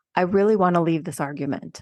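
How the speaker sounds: ordinary delivery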